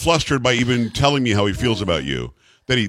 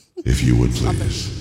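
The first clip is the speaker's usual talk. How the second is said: mock creepy pleading voice, lower pitch; 13 semitones lower than usual. Reading a listener's email aloud in the writer's voice: imitating a creepy emailer. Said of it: "If that email were in voice, that's what it would sound like".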